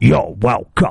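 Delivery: low, rough growl, slightly angry. Imagining a voice in the head after catching the bus, God's voice, a bit angry. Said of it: "He sounds a bit angry".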